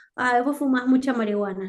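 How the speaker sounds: ordinary delivery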